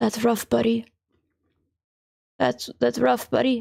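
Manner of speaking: rough, raspy, creaky put-on voice. Repeating a line someone said, doing the Zuko voice. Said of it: "you say it in the Zuko voice".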